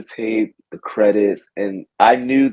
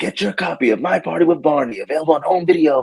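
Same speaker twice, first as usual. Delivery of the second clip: thrilled, excited announcer voice, high and fast; 6 semitones higher than usual. Recalling an old barney video preview, the speaker imitates the excited announcer voice. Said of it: "the guy had the really exciting voice".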